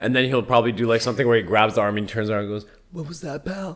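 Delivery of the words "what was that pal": very soft, very quiet, pitched-up hush. Describing a typical Steven Seagal movie scene, doing a soft-voiced Steven Seagal impression. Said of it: "Like in a really like soft voice".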